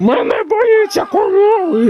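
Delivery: very high-pitched, shrill yelling. [name], told not to yell, complaining about cows, shouting. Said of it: "Не кричи".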